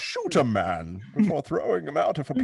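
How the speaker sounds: loud character voice with swooping, swinging pitch. Quoting the line that introduces Bane, after another speaker says "the way he says it": Bane voice. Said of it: "The way he says it".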